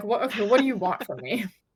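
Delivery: irritated, annoyed voice. Retelling being questioned by a man about a movie: imitating own irritated reply. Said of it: "I'm getting irritated with this man".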